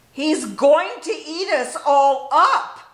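loud, full, drawn-out scream. Reading a story, the friends who came to see the baby, screaming. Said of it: "they screamed".

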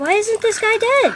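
frightened, panicking, high-pitched voice. Gamer panicking in a fight against another team, scared. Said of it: "I'm scared".

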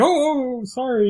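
startled, awkward, overly polite, very high flustered squeak. Retelling how a character stumbles up when surprised: Sam voice. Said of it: "typical Sam way".

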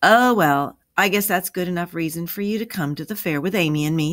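ordinary delivery

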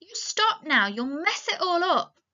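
angry outcry, pitched high. Narrator reads a woman's line to Lenny as he strokes her hair, crying out angrily. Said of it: "she cried angrily".

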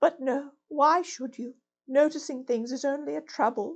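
faint, weakened voice. A toad lying very still and flat murmurs to the rat: weak, feeble voice. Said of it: "He certainly lay very still and flat, and his voice was weaker and his manner much changed. ... and his voice was weaker and his manner much changed".

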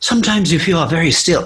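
strange put-on accent, vaguely Scottish-ish, odd-sounding. Retelling hiding from a firework, the speaker quotes Slamfy, imitating Slamfy's odd accent. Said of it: "I don't know what accent that is. Jesus Christ, that's not a Shrek accent".

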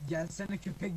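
ordinary talk

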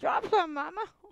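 high, loud, begging pet dog voice. Showing the viewers her dog below, voicing the dog begging for food.

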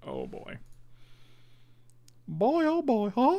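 very high pitch, swooping up and down. Speaker reacts to a two-for-one in the game, Mickey Mouse voice. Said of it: "You know who that voice was I did?".

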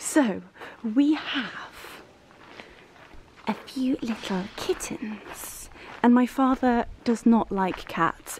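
hushed whisper. Sharing a little secret with listeners, whispering. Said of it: "I'm not sure why I'm whispering".

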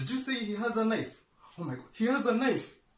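fake panic, hyperventilating and gasping, pitched very high. Acting out an intro skit about a knife: acted panic, hyperventilating. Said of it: "I am hyperventilating".

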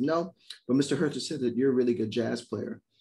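ordinary delivery

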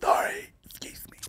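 put-on whisper. Acting out a woman sneaking past cameras: imitating someone whispering. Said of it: "And whisper".

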